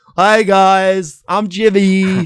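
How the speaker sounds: very slow delivery with "guys" drawn out. Doing an impression of Jimmy after being asked for one: Jimmy impression. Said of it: "And then you got Jimmy".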